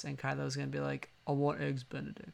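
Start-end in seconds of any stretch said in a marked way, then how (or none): 1.3-2.3 very monotonous, flat drone with no swing. Acting out Kylo Ren ordering breakfast: Adam Driver voice. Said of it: "he's gonna say it in his, like, Adam Driver voice".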